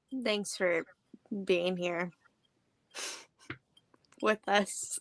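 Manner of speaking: slow, insincere, not genuine-sounding tone. Thanking the audience for being here: sounding insincere. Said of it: "couldn't have sound less genuine".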